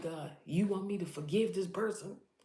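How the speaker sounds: put-on, exasperated, frustrated yelling out. Retelling own past words to god: retelling yelling at god. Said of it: "I'm yelling at God".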